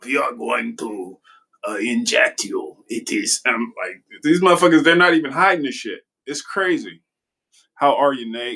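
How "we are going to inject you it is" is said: slow, put-on German accent. Imitating a man announcing mandatory vaccinations, German accent, Bond-villain style. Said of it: "he sounded like a, a James Bond villain, like the German accent".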